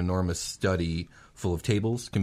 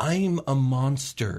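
high, watery voice, right on the verge of tears; 6 semitones higher, 3 dB louder than usual. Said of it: "she's really watery-eyed".

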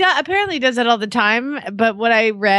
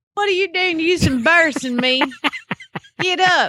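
put-on Southern accent, much higher; 6 semitones higher than usual. Practicing a Southern accent, scolding someone to get out of the water: Southern accent. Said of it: "You do that so well".

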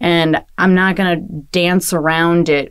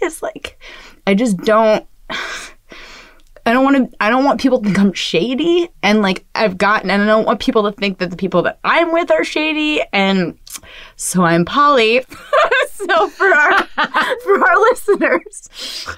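tearful, pitched-up crying speech; 7 semitones higher than usual. Admitting to another speaker about being poly, crying while talking. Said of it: "I'm crying about it right now".

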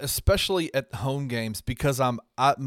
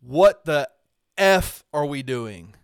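loud, raised, top-of-the-lungs screaming; 5 dB louder than usual. Retelling how a player turned to the bench mid-game: imitating a player screaming. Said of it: "looks at the bench and screams".

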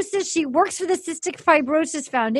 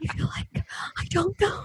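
soft, unvoiced, pleading whisper. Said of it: "And then she goes".

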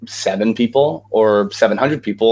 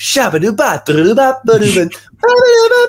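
put-on very high, loud childlike nonsense scatting. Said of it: "the guy who would sit in a long car ride and be like".

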